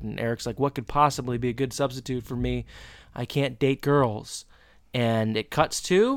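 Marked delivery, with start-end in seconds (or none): none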